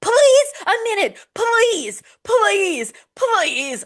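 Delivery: mock very high, slow, drawn-out desperate pleading. Imitating a woman passed over for a job, mock-desperate pleading. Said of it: "it's giving a little desperate".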